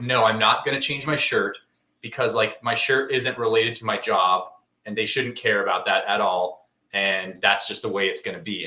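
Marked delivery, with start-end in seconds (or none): none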